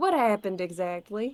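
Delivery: put-on accent of the American South. Reading a game line aloud while trying out a voice: southern accent. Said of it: "Is that a good Southern accent?".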